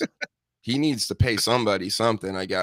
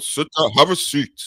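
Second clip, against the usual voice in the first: loud, stern, authoritarian, cop-like newscaster voice; 4 semitones higher, 5 dB louder than usual. Describing a man people take for a cop, imitating his authoritarian newscaster voice. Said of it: "newscaster type voice, all authoritarian".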